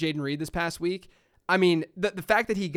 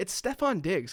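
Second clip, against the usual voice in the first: put-on whisper; 2 semitones higher, 3 dB quieter than usual. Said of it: "whispering it to him".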